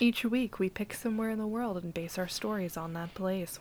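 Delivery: soft, sultry podcast-host narration voice. Podcast host introducing the show to listeners, sultry voice. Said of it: "Why am I talking like this?".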